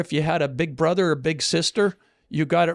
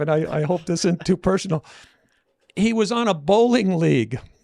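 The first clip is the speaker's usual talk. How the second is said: speech broken up by laughing through the words. Telling a story about a financial consult, laughing while talking. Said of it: "I'm sorry I'm laughing".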